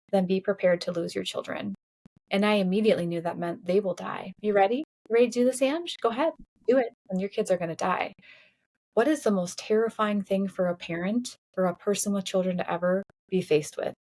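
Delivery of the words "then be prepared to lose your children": ordinary delivery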